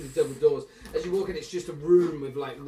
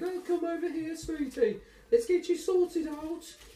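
raised, high-pitched put-on voice. Imitating the high-pitched voice in the background during hairstyling: high-pitched put-on voice. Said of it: "you hear the high-pitched voice going off in the background again".

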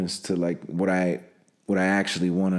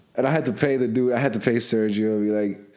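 ordinary talk, nothing marked

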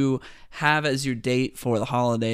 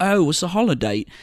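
terrible put-on Australian accent, high pitched; 5 semitones higher, 4 dB louder than usual. Recounting a film scene where the mall Santa asks a question, terrible Australian accent. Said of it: "That's a terrible Australian accent".

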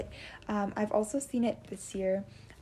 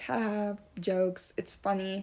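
plain

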